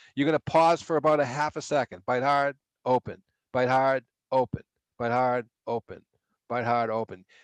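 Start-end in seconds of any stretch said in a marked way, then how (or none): 2.1-7.2 even, steady, counted rhythmic coaching cadence. Instructor showing how to coach a patient through a bite scan: rhythmic coaching cadence. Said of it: "You hear the cadence in my voice?".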